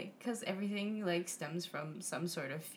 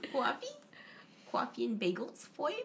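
mock Brooklyn accent, higher pitch; 6 semitones higher, 4 dB louder than usual. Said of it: "that's like a Brooklyn accent".

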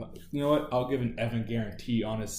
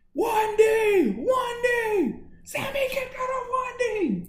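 put-on very high, very slow, booming excited commentator voice; 6 dB louder than usual. Retelling a commentator calling the end of a match: excited Michael Cole match call. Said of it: "and in his voice".

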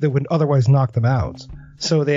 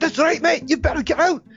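put-on drunken hooligan shouting. Retelling how drunk hooligans started shouting: imitating drunk hooligans shouting. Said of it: "start shouting at me".

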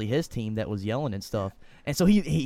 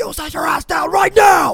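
very high, very loud, shrill, rough, coach-style scream; 12 dB louder than usual. Retelling how the insane coach yelled at players: imitating a coach screaming. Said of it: "He literally screaming at top of his lungs".

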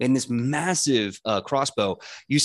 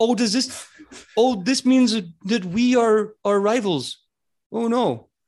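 put-on good-boy dog voice, higher pitch; 9 semitones higher, 3 dB louder than usual. Voicing a golden retriever archer greeting the party: golden retriever character voice. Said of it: "that good boy of a voice".

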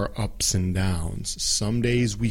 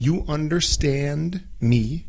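slow, carefully enunciated, clear, slightly higher pitched; 6 semitones higher than usual. Speaker addressing english learners, showing them they understand, speaking slowly and clearly. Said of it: "because I'm speaking a bit more slowly and clearly".

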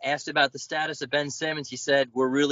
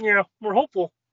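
high puppet voice, pitched up, a bit loud; 6 semitones higher, 5 dB louder than usual. In a mock live interview asked for an update, answering in a Kermit the Frog voice. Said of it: "Kermit, any updates?".

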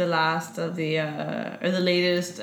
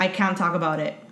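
usual speaking voice

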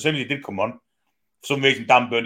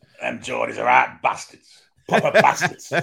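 gruff, slow, drawn-out, rough, creaky grumble; 4 dB louder than usual. Doing the impression a viewer asked for: Sean Bean impression. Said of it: "can we have a Sean Bean bastard impression".

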